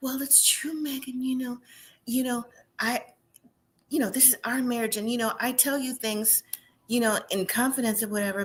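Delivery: soft, little, meek church-mouse voice. Retelling what Jessica said to Megan, imitating Jessica's little meek voice. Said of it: "in a in a little meek voice".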